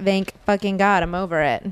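ordinary talk, nothing marked

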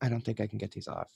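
hushed, very quiet, barely audible half-whisper. Retelling a friend's words in front of a sales associate: imitating someone half-whispering. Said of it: "whispering to me in front of the sales associate".

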